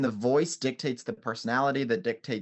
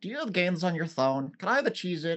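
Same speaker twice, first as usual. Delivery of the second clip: put-on high, sporadic, all-over-the-place little kid voice; 7 semitones higher than usual. Showing how the puppet Jackie talks, like younger cousins: Jackie puppet voice. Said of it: "in the way that he talks and asks me things like".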